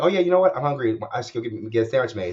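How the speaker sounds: normal talking voice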